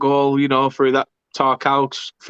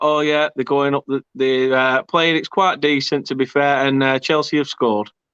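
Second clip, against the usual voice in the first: plain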